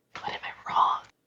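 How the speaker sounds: quiet, unvoiced whisper. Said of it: "'cause we're whispering in the bath".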